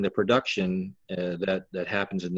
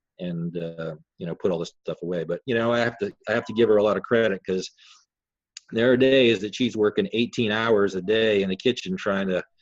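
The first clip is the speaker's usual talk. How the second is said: ordinary talk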